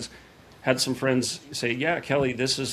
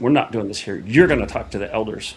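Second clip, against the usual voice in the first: mimicked curt, blunt, dismissive tone; 3 semitones lower, 5 dB louder than usual. The speaker retells what a man told him after the service, retelling a curt reply. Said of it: "just like that".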